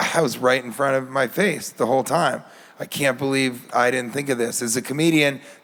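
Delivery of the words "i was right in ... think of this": ordinary talk, nothing marked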